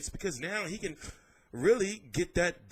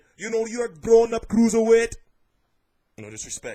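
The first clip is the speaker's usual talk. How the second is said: put-on very loud, strong Scouse accent; 4 semitones higher, 12 dB louder than usual. Quoting Tony Bellew on fighting David Haye, in a strong Liverpool accent. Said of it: "I tried my little, my, my strong Liverpool accent".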